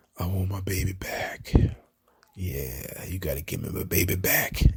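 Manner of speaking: sultry, breathy, slow near-whisper. Retelling a wrestling segment, imitating R-Truth's sultry tone. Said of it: "he said it in such a sultry tone".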